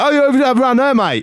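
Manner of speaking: very high, yelled call, projected out. Retelling a cab driver calling out of a window: imitating a shout. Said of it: "he was just shouted something to me out the window".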